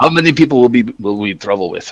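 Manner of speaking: high, put-on Slavic accent. Repeating an in-character question to the game master: Slavic accent. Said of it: "a kind of a Slavic accent".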